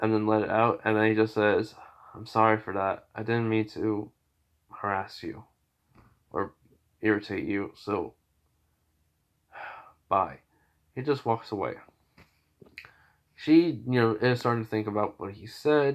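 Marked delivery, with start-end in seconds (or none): 2.1-10.4 mock calm anger, quieter and slower. Retelling a story of what he said to her, retelling in calm, mad voice. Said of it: "saying in a more calm voice".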